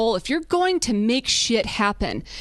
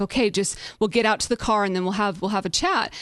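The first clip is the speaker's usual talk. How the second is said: ordinary talk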